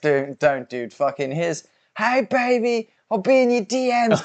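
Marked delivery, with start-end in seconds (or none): 2.0-4.2 very high-pitched taunting voice. Mocking a fighter's post-fight interview line: imitating McGregor. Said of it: "in that post-fight interview".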